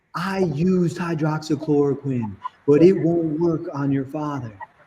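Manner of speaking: voice lifted, mocking. Retelling what the infectious disease doctor said: imitating a raised voice. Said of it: "she raises her voice and goes".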